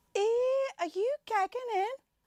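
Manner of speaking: put-on Liverpool Scouse accent, very high. In a skit showing words a Scouser would say, Scouse accent. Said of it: "words you would typically hear from a Scouser".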